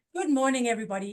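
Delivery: beautiful put-on Jamaican accent. Retelling a program participant's greeting: Grace's Jamaican accent. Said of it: "in her beautiful Jamaican accent".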